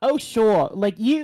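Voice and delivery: very loud, high, put-on sarcastic character voice. Voicing a character who sarcastically answers another: sarcastic put-on character voice. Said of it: "let me do the voice".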